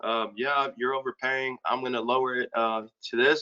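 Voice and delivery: low, flat, dull, unenthusiastic salesman voice. Coaching listeners on sales enthusiasm, imitating an unexcited salesman. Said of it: "He sounds like a loser".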